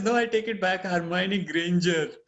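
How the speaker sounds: plain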